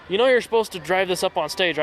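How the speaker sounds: usual speaking voice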